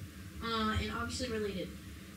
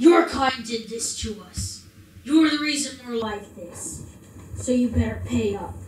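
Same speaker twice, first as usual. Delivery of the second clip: scornful, spitting angry voice, louder; 15 dB louder than usual. Voicing a dead figure who spits at a Dragonborn: contemptuous spitting anger. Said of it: "he spits at your feet".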